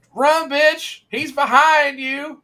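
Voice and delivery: very high, loud, drawn-out shout. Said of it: "stand up and go".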